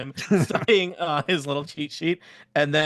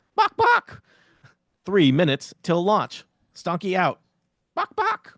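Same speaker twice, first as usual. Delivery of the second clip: robotic pre-recorded announcement voice; 3 semitones higher than usual. Voicing a pre-recorded announcement at a lever: robotic voice. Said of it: "a robotic voice, which is Stonky".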